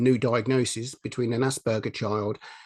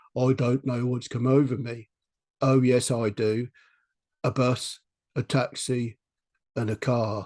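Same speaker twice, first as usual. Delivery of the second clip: very monotonous, flat, droning, level delivery. Imitating someone they once supported telling a joke, in a flat monotone. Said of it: "very, very monotonous, monotone".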